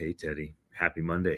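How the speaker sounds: deep, soft radio voice. Answering the host's handoff with a greeting, in a deep voice. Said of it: "Oh, deep voice".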